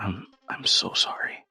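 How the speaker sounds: very slow, breathy, hushed whisper. Voicing a character leaning over an unconscious man: whispering an apology. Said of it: "lean down next to the guy and just whisper".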